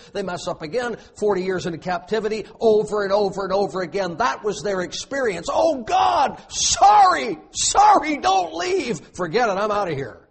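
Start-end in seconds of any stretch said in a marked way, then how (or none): 5.6-10.1 mock very high, very slow, drawn-out whining wail. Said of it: "God hears them whining".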